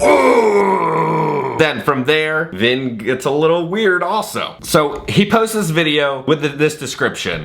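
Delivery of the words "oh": high, loud, belted mock "oh". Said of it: "And then Vin just goes".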